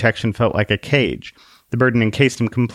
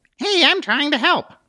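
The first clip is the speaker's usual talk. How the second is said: very high-pitched mechanical robotic whine. Narrator reading a small figure on a man's glove speaking to him, in a high-pitched whine. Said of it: "said in a high-pitched whine".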